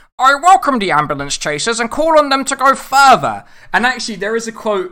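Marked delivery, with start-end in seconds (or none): 0.2-3.5 very loud, pitched-up, declaiming politician voice. Doing a requested impression at the end of a review, Keir Starmer voice. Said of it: "I will do the Keir Starmer voice for you all".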